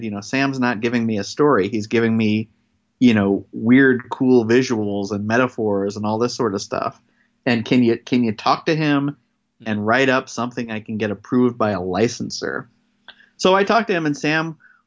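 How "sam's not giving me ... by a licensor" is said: ordinary delivery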